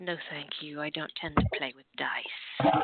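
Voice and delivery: hushed, very quiet, soft-spoken voice. Narrating a scene, a woman replies very quietly. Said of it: "very quietly says".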